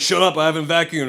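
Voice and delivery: plain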